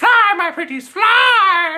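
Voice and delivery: "fly" stretched out, very high, slow and loud. Retelling a villain sending flying monkeys out, Wizard of Oz witch voice. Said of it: "like, the witch from Wizard of Oz".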